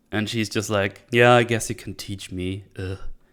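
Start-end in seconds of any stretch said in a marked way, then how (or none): 1.1-2.6 mocking, put-on very sarcastic tone. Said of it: "very, very sarcastic".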